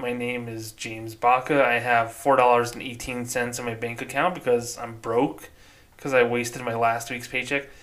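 normal talking voice

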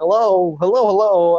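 high, loud calling out. Retelling how he opened an interview, in the Phone Guy voice. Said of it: "put on the phone guy voice".

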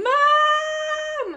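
put-on long, very high, drawn-out child's shriek. Telling how her son yelled her name during a phone call: imitating a child screaming 'Mom'. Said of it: "our son just started screaming my name".

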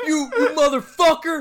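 put-on enraged superhero yell. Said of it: "he's like".

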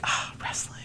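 soft, pleased whispered aside to oneself.

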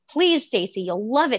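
mock nagging, pleading, begging tone. Retelling how a twin kept begging her to read a book: imitating Sarah pleading. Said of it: "begging me, pleading with me".

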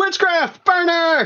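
very high, shrill shout. A player voices the guy in the back of the room, yelling. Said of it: "the guy in the back yells".

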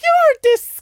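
very high, put-on posh old-lady voice. Telling a story, quoting his grandmother's reaction: imitating a posh old woman. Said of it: "my grandmother's just like very posh old woman".

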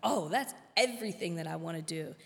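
plain

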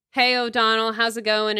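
ordinary talk

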